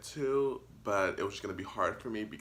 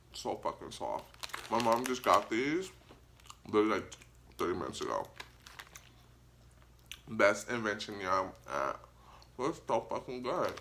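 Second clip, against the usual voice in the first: muffled speech with mouth full, chewing. Eating something the speaker's mom just got, talking with mouth full. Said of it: "it's very rude for me to talk with my mouth full".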